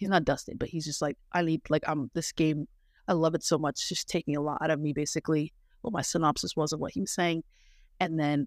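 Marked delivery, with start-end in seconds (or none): none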